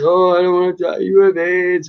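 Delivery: acted, high voice, weeping through the words. Retelling what the doctor said while crying: imitating a crying doctor. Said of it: "Even when the doctor came in crying".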